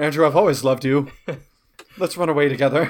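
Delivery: loud, put-on classic movie-star Transatlantic accent. Addressing Andrew in an acted scene, Transatlantic accent. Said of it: "Transatlantic accent".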